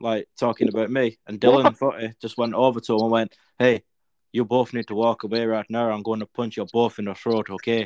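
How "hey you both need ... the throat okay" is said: bad put-on Irish accent. Retelling how Dylan warned off two men, imitating Dylan's Irish accent. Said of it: "What the fuck is that accent?".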